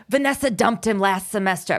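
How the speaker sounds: mocking put-on raspy old-lady voice. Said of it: "it's like she's an old lady".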